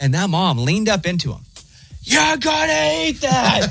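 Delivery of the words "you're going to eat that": put-on very high, slow, rough screaming yell. Retelling how a mom leaned in to her child: imitating a mom screaming back. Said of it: "She matched the energy".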